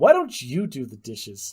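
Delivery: put-on cheeky, sassy, snarky, swooping kid-like voice. Retelling what a six-year-old said back about the dishes: imitating Jane getting snarky. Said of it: "got snarky with me and goes".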